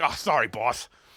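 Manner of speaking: low, dopey, dim-witted sidekick voice. Scolding the left hand, then answering as Lefty, dim Lefty voice. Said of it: "he's not very he's not very bright".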